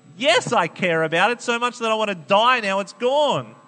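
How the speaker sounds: high, loud, sulky petulant voice.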